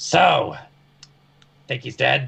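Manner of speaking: rough, gruff, loud voice. Player voicing Raimi turning to the rest of the party, in a gruff voice. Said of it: "everyone hears in a gruff voice".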